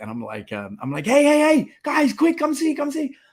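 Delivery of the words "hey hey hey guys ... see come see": shrill, very high, loud excited screaming. Retelling calling the five kids to come see: retelling own screaming at top of lungs. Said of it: "I start screaming at the top of my lungs".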